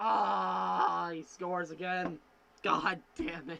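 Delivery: bitter, begrudging, salty tone with drawn-out "ah". Reacting as Caulfield scores again while watching: salty. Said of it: "I'm sorry I'm salty".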